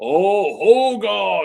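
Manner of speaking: loud, belted, deliberately bad big-man voice. Trying the impression again: bad Andre the Giant impression. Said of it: "do a really bad Andre".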